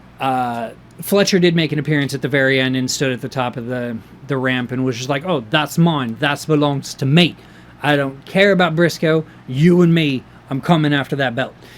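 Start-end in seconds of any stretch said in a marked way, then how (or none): 5.3-11.5 terrible put-on Australian accent. Speaker retells Fletcher's appearance at the top of the ramp, bad Fletcher accent impression. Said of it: "terrible accent".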